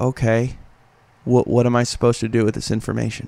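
put-on unimpressed, dismissive voice. Retelling how a fighter reacted to a friendly introduction: imitating Nick Lentz's dismissive reply. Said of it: "with just this sideways glance".

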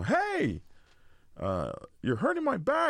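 sudden, high, rising, put-on yell. Retelling someone twisting their arms on a bike: retelling a scream. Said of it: "I screamed".

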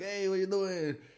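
high, playful, joking shout. Retelling how someone reacted to a photo: imitating someone shouting jokingly. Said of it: "like, shouting, he was joking around".

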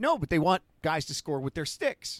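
usual speaking voice

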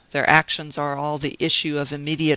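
ordinary delivery

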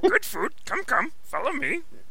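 put-on raspy old alien voice. Saying he can almost do Frank Oz's character, then doing his Yoda voice. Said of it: "I can do his Yoda voice almost".

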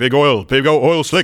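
manic put-on comedian voice. Joking about Fern Gully after Robin Williams is mentioned: Robin Williams voice. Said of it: "where Robin Williams also did another voiceover".

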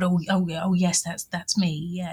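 mock embarrassed mumble. Retelling how Dad answered a stranger on a train platform, imitating an embarrassed mumble. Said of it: "he sort of mumbled".

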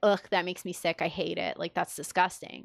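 ordinary talk

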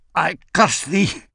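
pained curse, gasped out breathlessly. Narrator reading a dying woman's curse at the man gripping her hair, gasping in pain. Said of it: "she gasps in a lungful of pain".

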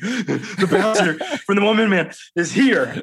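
play-acted puffing, breathless, winded voice. Retelling how the social media guy came running in: imitating someone out of breath. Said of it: "He's out of breath".

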